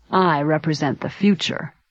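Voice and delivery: ordinary delivery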